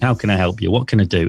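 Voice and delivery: normal talking voice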